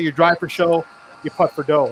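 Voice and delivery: ordinary talk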